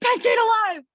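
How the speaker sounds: very high shout. Reading their all-caps Twitter handle aloud, yelled. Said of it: "I read my personal Twitter handle as yelling, 'cause I have it in all caps".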